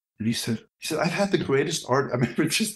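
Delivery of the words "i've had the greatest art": high, exasperated, insistent voice. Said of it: "he was so exasperated with me".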